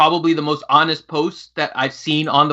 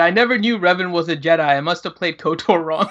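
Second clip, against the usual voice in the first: plain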